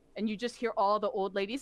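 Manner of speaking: ordinary delivery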